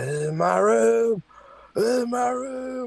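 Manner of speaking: very high, slow, dragging zombie voice. Retelling a lady banging at the door and claiming the room, in a zombie-like voice. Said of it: "she sounds like a fucking zombie".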